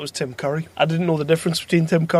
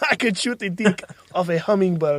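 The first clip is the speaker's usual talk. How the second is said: bad, badly done, put-on Russian accent; 3 semitones higher than usual. Repeating a woman's line from a movie, in a bad russian accent. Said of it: "hell accent was that?".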